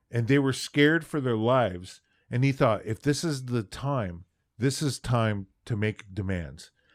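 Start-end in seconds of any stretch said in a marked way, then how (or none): none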